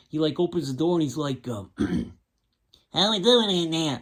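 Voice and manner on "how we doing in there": put-on high, fast nasal Southern accent. Retelling a man opening the door, Robert Duvall voice, nasal southern. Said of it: "a nasally southern accent ... at a higher pitch and sped up ... like that".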